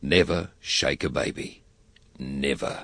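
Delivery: solemn, grave delivery, low and slow. Delivering a serious campaign message, much more serious delivery. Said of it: "you will deliver it in a much more serious way".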